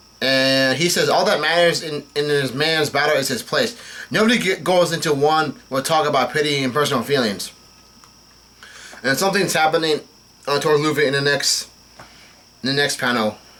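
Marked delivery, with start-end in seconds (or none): none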